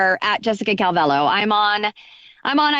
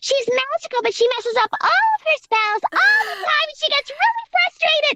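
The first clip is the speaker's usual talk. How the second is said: put-on half-squirrel witch voice, pitched higher. Showing how a character once played talks: Fam voice. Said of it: "she talks like this".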